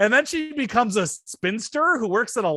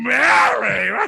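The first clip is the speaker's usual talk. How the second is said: put-on drunk voice, louder; 4 dB louder than usual. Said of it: "By the end, he's like".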